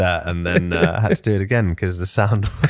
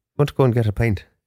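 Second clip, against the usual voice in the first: fake, put-on Irish accent; 3 semitones higher than usual. Asked to just talk, improvising a bit in a put-on Irish accent. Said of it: "Try and do Irish".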